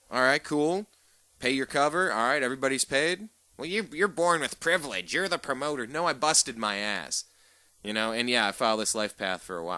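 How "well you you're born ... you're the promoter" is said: high, whiny put-on complaining voice. Acting out a hypothetical complainer's retort, in a put-on high whiny voice. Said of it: "a hypothetical person with a high-pitched, whiny voice".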